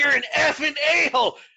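high, loud, shrieking scream, pitched way up. Recounting an uncensored old clip where a man screamed, retelling the scream. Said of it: "He just screamed".

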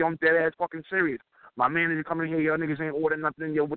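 plain

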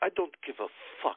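put-on thick Sri Lankan accent. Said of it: "He has this real thick Sri Lankan accent".

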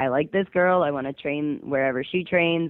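plain

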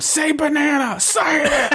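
acted, blaring, very high-pitched scream. Retelling a scene where he torments Carl over a loudspeaker: retelling a scream. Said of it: "Screaming at him".

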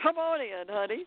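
big, homely country farm-woman voice. Recounting a big woman welcoming the speaker into her house, booming farm-lady voice. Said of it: "big booming voice like a farm lady".

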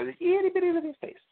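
very high, fast, squeaky genie voice.

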